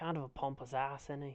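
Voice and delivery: very quiet, hushed half-whisper. Half-whispering to a companion after the visitor leaves: half-whispering in character. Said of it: "I'm just gonna kind of whisper".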